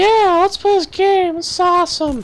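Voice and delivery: put-on very high, loud childlike little-kid voice. Speaker acts out a little kid wanting to play a game, high little kid voice. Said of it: "you had a high voice and you were just like".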